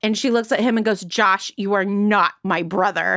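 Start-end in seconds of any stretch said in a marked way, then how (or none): 1.0-3.2 insistent, very emphatic, flat and stressed delivery. Retelling a movie scene where Cher answers Josh: emphatic Cher imitation. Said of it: "she's very emphatic".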